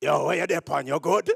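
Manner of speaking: put-on tough Jamaican kid voice. Explaining how six-year-olds in Jamaica talk, in rugged Jamaican kid talk. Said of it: "in Jamaica, a six-year-old, they talk rugged".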